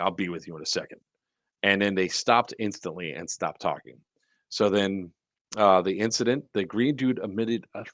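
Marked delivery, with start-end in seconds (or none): 0.0-1.0 low, growled delivery. Retelling a line he said to people who were talking, growled. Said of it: "And I growled it. I was like".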